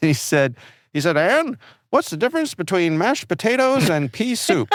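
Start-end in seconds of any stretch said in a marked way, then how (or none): 1.2-4.7 put-on old-timey character voice, much higher. Retelling a joke from an old show, in a Mickey Rooney voice. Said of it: "your impression of Mickey Rooney is oddly spot on".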